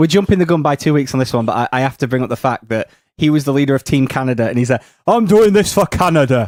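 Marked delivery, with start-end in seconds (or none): 5.1-6.5 put-on thick, laid-on Manchester accent, pitched up. Imitate the leader of Team Canada saying who he does it for, in British Bulldog's thick Manchester accent. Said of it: "his thick Manchester accent".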